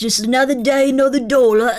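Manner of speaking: loud put-on Cockney accent in a man's voice. While listening to episodes, speaker puts on a Cockney British man voice. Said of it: "Cockney British man voice".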